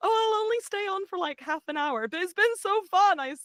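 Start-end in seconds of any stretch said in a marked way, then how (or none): 0.0-2.1 put-on Southern belle accent. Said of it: "I was like".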